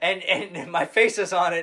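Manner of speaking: high, loud, slow sleazy salesman voice. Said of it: "What a terrible R V salesman Saul".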